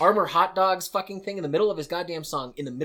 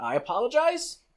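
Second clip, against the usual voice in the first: ordinary talk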